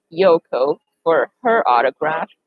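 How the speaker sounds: ordinary talk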